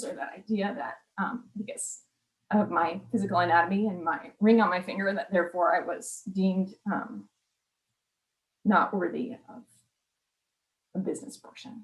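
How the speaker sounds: soft, moved voice with emotion breaking through. Speaker sharing a personal experience with a group, getting emotional. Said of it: "Sorry for getting emotional".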